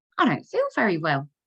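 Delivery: acted, bright, really cheery, upbeat voice. Retelling what he said to her cousin at the game, imitating his cheery voice. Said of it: "in his really cheery voice".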